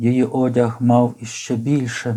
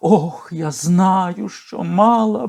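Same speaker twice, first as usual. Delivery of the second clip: high, drawn-out crying out; 7 semitones higher than usual. Reading a story, the memsahib answers the young officer; cried out. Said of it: "скрикнула вона".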